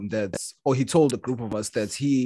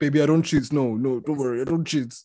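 fake, mock Nigerian accent. Acting in a comedy skit, speaking in a put-on Nigerian accent. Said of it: "Why did you go with the Nigerian accent?".

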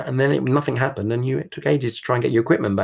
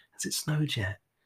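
play-acted drowsy, barely awake, very quiet and hushed; 12 dB quieter than usual. Retelling what the listener asked while half asleep, imitating a half-asleep voice. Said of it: "in your half asleep state".

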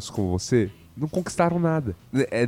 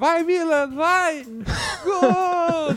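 put-on shrill, very slow commentator cry, "gol" stretched. Describing Italian TV coverage of a Milan match, imitating a shouting Italian commentator. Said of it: "que fica o cara gritando".

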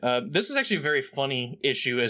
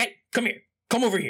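very high, snappy, sharp delivery; 10 semitones higher than usual. Retelling a comic scene where the Wasp calls the lizard over: imitating the Wasp snapping. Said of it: "snapping at him to, like, come here".

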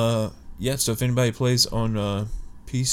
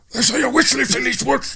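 shrill, loud pronouncement pitched way up high; 13 semitones higher, 5 dB louder than usual. Retelling the forest scene from the movie: Gimli voice. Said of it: "I'm going to assume that that's Gimli".

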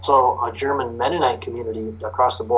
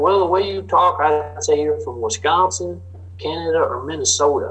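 put-on, rural good-old-boy southern drawl; 4 semitones higher than usual. Retelling what a southern farmer said on hearing him talk: southern drawl impersonation. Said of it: "I apologize for my southern drawl and impersonation".

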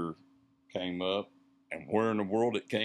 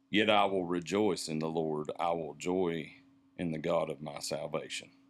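ordinary talk, nothing marked

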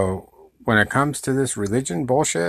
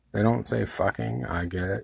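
usual speaking voice

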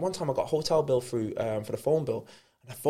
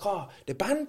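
put-on broken English accent and phrasing; 4 semitones higher than usual. Retelling what a man told him, in a broken english accent. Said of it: "but in a broken accent".

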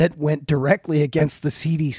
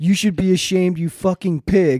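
higher-pitched yell; 4 semitones higher, 4 dB louder than usual. Retelling how a passerby drove by and yelled: imitating someone yelling. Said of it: "yells out".

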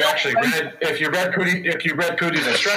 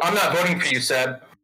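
ordinary talk

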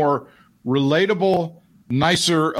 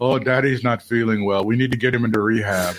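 flat, put-on Canadian accent; 6 semitones lower than usual. Imitating what Natty's mother says on the show: Canadian accent. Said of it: "I like the Canadian accent".

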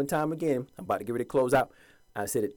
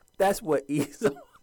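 ordinary talk

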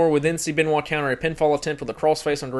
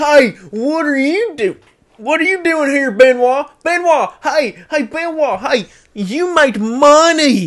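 shrill, booming, very slow, high-pitched drawn-out holler; 11 semitones higher, 8 dB louder than usual. Retelling a heckle shouted at Benoit: JBL impression. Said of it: "you just see J B L".

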